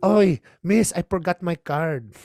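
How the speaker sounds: thick put-on Filipino accent. Getting into the sauna, the speaker talks to the lady at the door; heavy Filipino accent. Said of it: "I poured on that accent".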